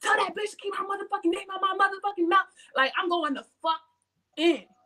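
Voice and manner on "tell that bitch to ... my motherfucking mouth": fast, high-pitched, furious rattled-off rant. Recounting going off at someone as another person walked in: retelling own angry yelling. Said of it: "I'm yelling".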